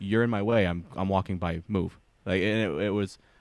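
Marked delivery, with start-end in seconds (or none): 0.0-2.0 put-on blunt, curt, direct tone. Retelling how people in France told them to move: imitating a blunt, direct demand. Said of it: "we would read it as aggressive".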